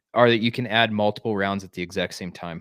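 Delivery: ordinary delivery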